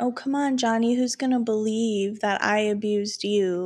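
ordinary delivery

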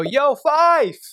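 play-acted frat-boy yell, very high, loud, casual, friendly. Retelling calling out to someone walking out of a building: retelling own yell across a building. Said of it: "I yell out".

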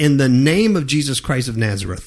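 normal talking voice

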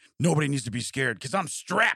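acted yelling. Speaker retells a man yelling at his bathroom mirror, retelling a yell. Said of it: "He's like yelling in the mirror".

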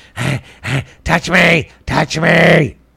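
talking dog character voice. Voicing the dog as if animals could talk: voicing the dog talking. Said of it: "and then he's like".

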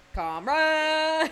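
screaming. Calling out a fan's name: screaming. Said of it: "Four inches if you must scream".

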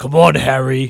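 very loud, booming, bad storybook character voice. Joking about reading audiobooks with little voices, Hagrid voice. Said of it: "Like I'm like Hagrid or something".

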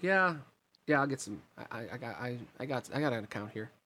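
normal talking voice

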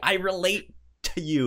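mock bright, high, chipper, overly cheerful voice. Retelling how the childlike hero greets the Teen Titans: imitating a chipper, happy tone. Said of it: "the happiest, most, like, ch-, chipper".

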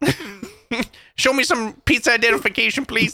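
cartoonish puppet-style police officer voice. Teasing the other speaker that they sound like a pizza cop: pizza cop Muppet voice. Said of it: "Like a pizza cop Muppet".

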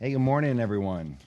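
hoarse, sick-sounding voice. Greeting the congregation while sick: sick voice. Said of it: "That's my real voice this morning".

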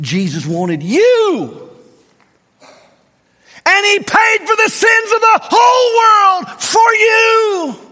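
very high booming shout, "you" drawn out. A pastor, whom a listener then tells he is yelling, speaks; yelling. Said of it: "you're yelling".

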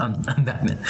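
ordinary talk, nothing marked

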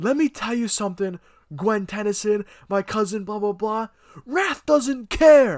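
big cartoon brute talking. Speaker praises a game character by quoting how he talks, Rath voice. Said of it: "He goes".

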